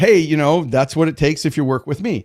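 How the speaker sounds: ordinary talk, nothing marked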